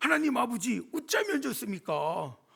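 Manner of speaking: Korean in thick Gyeongsang dialect. Retelling a man's prayer during a church meeting: imitating Gyeongsang dialect. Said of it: "경상도 사투리로 이야기하는".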